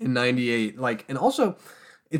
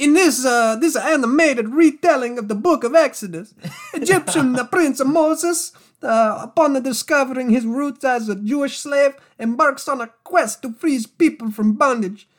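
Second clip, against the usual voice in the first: put-on very high, loud Italian mobster accent; 12 semitones higher, 6 dB louder than usual. Reading a movie synopsis aloud, in an italian mafia boss accent. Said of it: "I was supposed to be a mafia boss".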